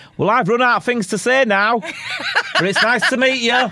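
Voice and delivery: put-on very high, loud shouting. Retelling shouting into someone's ear while music plays loud: imitating shouting over loud music. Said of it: "I'm shouting into her ear going".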